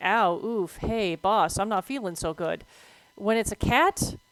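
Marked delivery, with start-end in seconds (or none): none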